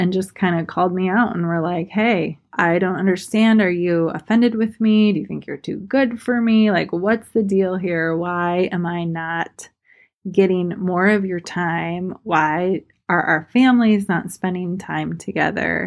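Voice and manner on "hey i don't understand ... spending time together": ordinary talk, nothing marked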